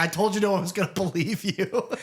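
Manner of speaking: high, cackling, mocking voice between laughs. Retelling a scene, imitating Chucky laughing while talking. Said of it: "Chucky's laughing his fucking ass off".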